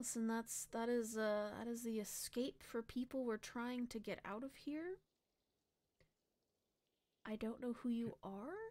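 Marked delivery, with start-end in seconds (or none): 1.6-8.5 hushed whisper, quieter. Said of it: "he's whispering to you".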